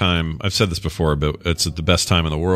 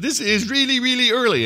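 put-on shrill, indignant, angry voice, very high. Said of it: "he'd be all mad".

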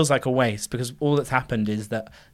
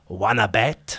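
put-on awful Eastern European accent; 2 semitones lower than usual. Describing the colonel holding a poker chip in a film: Tom Hanks's awful accent impression. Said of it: "him doing his awful accent".

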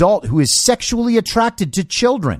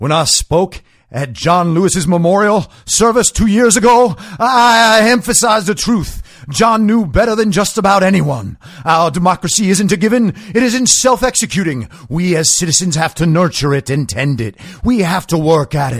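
put-on soulful voice. Reading a quoted statement aloud as a soulful Barack Obama impression. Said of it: "Do I sound like Barack Obama as a civil rights leader".

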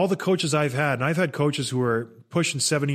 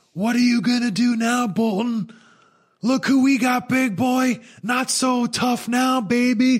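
put-on very high, screaming taunting yell; 10 semitones higher, 4 dB louder than usual. Retelling how the head coach taunted an opponent: imitating a coach screaming. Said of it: "Torts just starts screaming at him".

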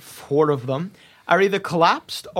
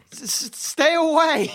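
shrill, shell-shocked yell pitched very high; 10 semitones higher than usual. Narrator voicing a human yelling at the group, in a shell-shocked yell. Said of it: "In a very shell-shocked voice".

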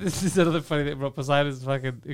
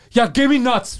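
pushy, blunt, aggressive, loud and high; 9 semitones higher, 7 dB louder than usual. Imitating a friend ordering food: imitating an aggressive food order. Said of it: "you ask aggressively".

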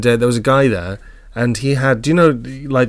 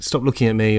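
plain

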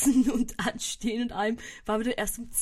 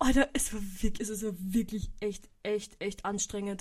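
ordinary talk

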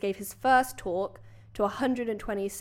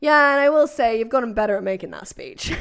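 put-on sassy teasing voice, louder; 2 semitones higher, 10 dB louder than usual. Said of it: "What a roast".

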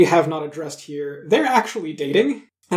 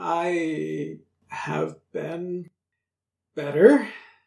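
faint, croaking voice with a drawn-out "I"; 3 dB quieter than usual. Narrating a scene, the storyteller voices a man who croaks at you, croaking voice. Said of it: "he just kind of croaks a little bit at you and goes".

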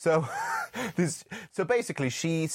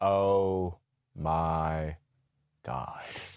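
put-on, very low, flat, deadpan monotone; 11 semitones lower than usual. Retelling how an actress says her line: imitating a monotone delivery. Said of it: "she sounds monotone".

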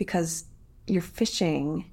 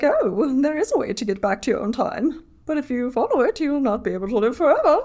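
put-on fancy woman's voice, pitched up, raised; 7 semitones higher, 5 dB louder than usual. Retelling what a woman says in the story, fancy lady voice. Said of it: "I'd love your fancy lady voice".

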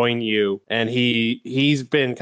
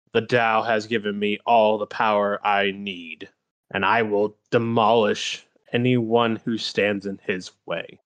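mock dead-level, toneless, very flat monotone; 2 semitones lower than usual. Retelling what a woman standing at the table said to Mario, in a flat monotone. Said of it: "she just very monotone goes".

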